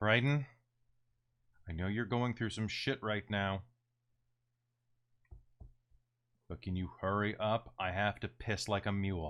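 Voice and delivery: very tired, exhausted voice. Voicing a very tired roommate knocking at the bathroom door: very tired roommate voice. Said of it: "and a very tired roommate named B".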